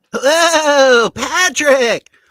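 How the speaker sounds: high-pitched cartoon voice, "hello" stretched out. Playing a guess-the-character game with others: SpongeBob voice. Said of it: "SpongeBob, SpongeBob".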